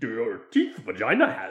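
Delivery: low, swooping alien sage voice, swinging pitch. Adding a missing mentor character to the movie: Yoda voice. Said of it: "It's like the Yoda's missing".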